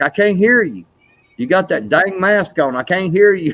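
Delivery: mock loud teasing voice. Teasing his wife about her mask, he acts out retelling talking loud. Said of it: "And I'm talking loud".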